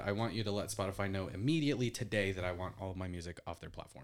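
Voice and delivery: plain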